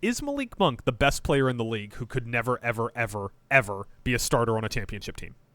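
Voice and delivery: ordinary talk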